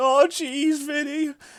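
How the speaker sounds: very high, loud cartoon exclamation, yelped. Mocking how a co-host ran through matches: Morty impression. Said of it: "doing his best fucking Morty impression".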